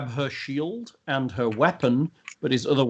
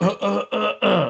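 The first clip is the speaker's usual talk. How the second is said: very slow string of pitched-up grunts; 7 semitones higher than usual. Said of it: "you just go".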